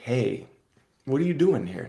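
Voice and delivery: put-on shouting. Imitating the subconscious voice that nags all day: imitating a yelling inner voice. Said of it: "my subconscious is yelling at me like".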